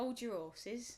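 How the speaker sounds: strong, proper London accent. Saying a phrase that a listener calls southern: strong London accent. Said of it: "You sounded like a proper Londoner there".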